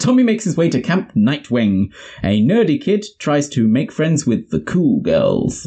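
vintage radio presenter delivery. Auditioning for voice acting, speaker narrates a camp story in an old-timey radio presenter voice. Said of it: "That's my radio presenter".

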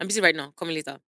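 ordinary talk, nothing marked

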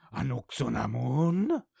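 odd, rough, weird creaky zombie voice. Recounting a film, the speaker voices a zombie calling out a name, weird zombie voice. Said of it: "In a weird zombie voice".

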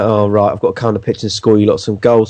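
ordinary talk

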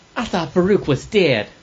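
put-on American Southern accent. Actor voicing a character's first line, in a southern accent. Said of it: "you did a kind of a southern accent for the first one".

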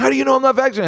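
very high, shrieking, screaming outburst. Recounting a woman's reaction when turned down during a pandemic, retelling her screaming. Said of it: "She starts screaming".

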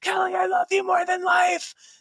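mock, very high, loud screamed-out call. Retelling screaming out as she was being pulled away: retelling own scream. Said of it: "I just screamed out".

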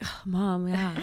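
frustrated, fed-up voice. Retelling a staged mother-daughter scene for a show: imitating a frustrated daughter. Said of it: "the mother-daughter, like, frustrated thing where I'm like".

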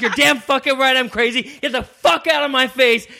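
full screaming outburst, very high-pitched. Retelling a confrontation with a stranger in a bar: imitating someone screaming.

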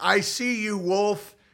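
mock, very slow yell, each word stretched. Recounting a stream, retelling a yell at someone unheard from in years: retelling a yell. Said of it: "I'm just literally yelling like".

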